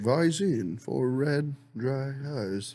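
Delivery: very slow, plodding, drawn-out commercial announcer read. Imitating the announcer from an old eye-drop commercial: monotone Ben Stein voice. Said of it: "He's like".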